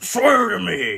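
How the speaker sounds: loud, high-pitched yell.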